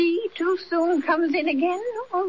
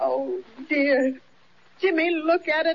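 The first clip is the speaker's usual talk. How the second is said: speaking through happy tears, tearful crying voice; 3 semitones lower than usual. [name], urged not to cry over the fortune, crying. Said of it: "Don't cry".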